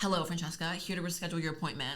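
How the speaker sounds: curt, snotty, snippy, bitchy tone. Retelling a receptionist's call, imitating her sounding bitchy. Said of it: "all bitchy".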